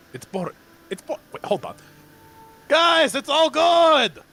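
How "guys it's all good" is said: loud shouting, projected as if to far listeners. Calling out to distant party members in character: yelling to distant allies. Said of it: "I can just yell".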